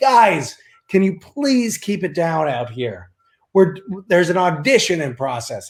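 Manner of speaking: play-acted mild yell, high and half-yelled. Retelling how the man at the audition yelled into the hallway: retelling a yell. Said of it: "he yelled into the hallway".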